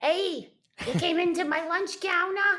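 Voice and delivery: put-on New York accent. Acting out a lunch counter skit alone, the speaker uses a New York accent. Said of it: "in a New York accent".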